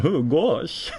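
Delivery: high, dopey, goofy cartoon voice. Retelling how someone voices a Kingdom Hearts character: Goofy voice. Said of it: "She does the goofy voice, like".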